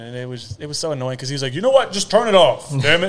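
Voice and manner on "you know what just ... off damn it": very loud booming coach voice, yelling at full volume. Retelling what an annoyed coach said about music: imitating a coach. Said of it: "That's a very good impression".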